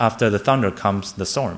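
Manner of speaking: plain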